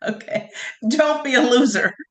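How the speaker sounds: talking through laughter. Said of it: "Let me stop laughing".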